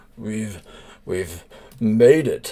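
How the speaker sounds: cheerful, voice kept down. Narrating a story, a character speaks while keeping his voice down; jovial but hushed. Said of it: "jovially but trying to keep his voice down".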